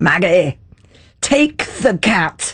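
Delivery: put-on speaking with Scottish accent. Retelling what a voice from behind her said, in [name]'s Scottish voice. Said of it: "this Scottish voice from behind".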